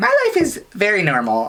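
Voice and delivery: put-on voice, high and swooping in pitch. Doing an impression of the person they're talking to, best Hannah voice. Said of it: "I'm going to do it in my best Hannah voice".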